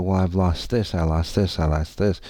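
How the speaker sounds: ordinary delivery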